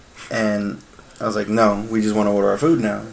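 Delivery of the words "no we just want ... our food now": dry, pointed, sarcastic tone, acted out. Retelling own reply to a waiter: retelling own sarcastic reply. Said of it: "I was being sarcastic when I said".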